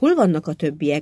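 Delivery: plain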